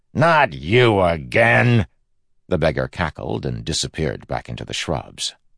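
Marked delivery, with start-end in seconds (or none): 0.2-1.9 raised, high-pitched, loud shout. Narrator voices a passing groundsman spotting a beggar, shouted. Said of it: "saw the beggar and shouted".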